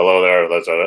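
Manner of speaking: really deep voice. Pitching a character's voice to producers: really deep voice. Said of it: "really deep voice".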